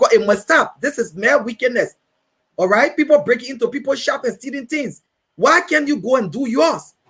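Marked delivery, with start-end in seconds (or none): none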